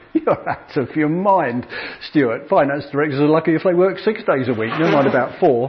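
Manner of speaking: normal talking voice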